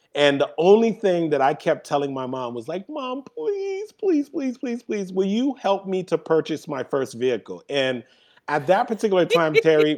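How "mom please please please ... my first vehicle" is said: earnest, repeated, pleading begging tone. Recalling being sixteen and begging mom to help buy a first car: imitating begging. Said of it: "it didn't matter how much I was gonna beg".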